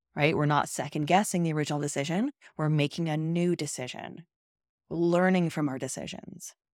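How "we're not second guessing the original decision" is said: quick delivery with "guessing" stressed and lifted. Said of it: "Do you hear the difference?".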